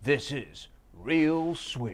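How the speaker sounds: put-on radio announcer voice, very slow and drawn out. Opening a jazz drumming show: radio announcer voice. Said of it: "This is the radio announcer voice".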